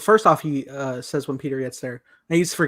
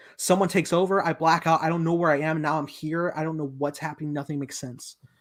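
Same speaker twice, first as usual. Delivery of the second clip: ordinary talk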